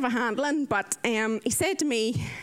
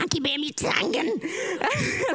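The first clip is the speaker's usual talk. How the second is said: very slow, forceful, aggressive, hammered out, pitched up; 6 semitones higher than usual. Speaker imitates how a best friend and a sister say the phrase: mock-aggressive delivery. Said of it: "they're like nearly like going to shoot you with the word".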